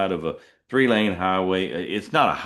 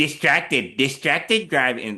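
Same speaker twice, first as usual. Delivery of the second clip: put-on unpleasant female alert voice, much higher; 7 semitones higher than usual. Speaker imitating the car camera's alert after grabbing a drink while driving. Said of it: "that's literally what the voice sounds like".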